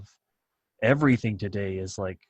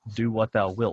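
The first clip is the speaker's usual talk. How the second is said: plain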